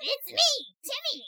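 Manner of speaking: put-on cartoon kid voice. Friends riffing on cartoon characters as one family: Timmy Turner voice. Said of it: "I can't really do this voice".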